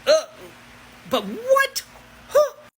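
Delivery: high, loud, mock baffled voice.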